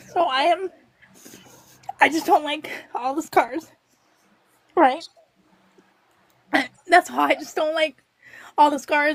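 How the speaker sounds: tearful, crying while talking. Speaker, just told not to cry, speaks tearfully. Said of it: "Don't cry".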